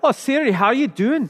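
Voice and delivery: fake Scottish accent, laid on thick. Showing how she greets her phone assistant, in a put-on Scottish accent. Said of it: "Nope, that's Scottish".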